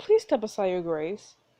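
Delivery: plain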